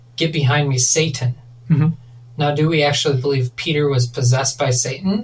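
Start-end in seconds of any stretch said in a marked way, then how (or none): none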